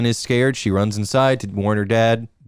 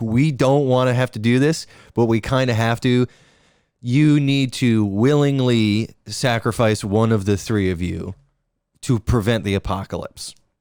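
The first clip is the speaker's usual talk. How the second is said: ordinary delivery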